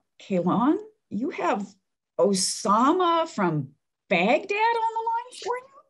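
high, slow, puzzled voice.

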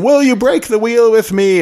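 high, loud, rousing rallying shout.

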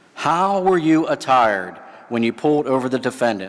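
ordinary delivery

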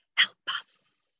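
faint, soft whisper with no voice. Describing a faint voice heard in a recording: whispered. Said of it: "but whispered".

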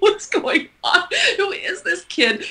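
puzzled, high, slow mumbling.

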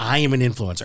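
put-on smug, grand, arrogant, self-important tone. Mocking the other speaker's boast about being an influencer: imitating an arrogant boast. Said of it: "you sounded so arrogant in, like".

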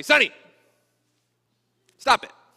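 firm authoritative tone. Showing how he speaks to his dog, the speaker gives a command in an authoritative voice. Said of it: "I use an authoritative voice".

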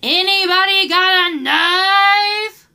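very slow, loud, high, drawn-out holler. Retelling someone shouting as they left the shoe aisle, retelling a loud shout. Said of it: "loud as fuck".

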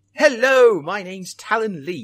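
put-on British accent, high, slow, deliberate. Opening a Minecraft video after being told to use one: put-on British accent. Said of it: "By having a British accent".

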